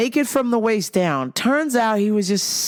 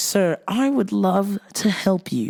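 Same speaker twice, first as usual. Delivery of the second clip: put-on British English accent. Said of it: "I always try to use my English accent".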